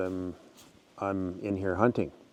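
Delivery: normal talking voice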